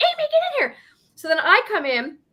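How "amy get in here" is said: put-on shrill yell, pitched way up, screaming. Retelling how the others called from the shed: imitating people screaming. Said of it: "they're all screaming, like".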